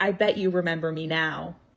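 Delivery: put-on, weird, patronizing, talking-down condescending tone. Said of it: "in a really weird, condescending tone".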